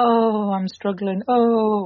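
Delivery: very slow, self-pitying voice. Imitating how mum talks to people on the phone: imitating a self-pitying voice. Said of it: "she has this, like, voice where she'll say".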